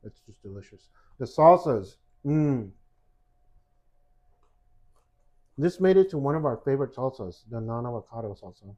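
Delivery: talking through a full mouth of food. Praising the salsas while eating, talking with mouth full. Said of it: "still talking with my mouth full like a chipmunk".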